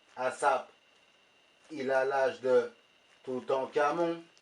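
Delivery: put-on slow Québécois-style Canadian French accent. Telling a story, a friend asks why he's speaking with that accent: Canadian French accent. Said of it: "pourquoi tu parles avec l'accent canadien?".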